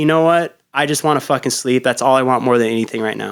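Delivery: ordinary delivery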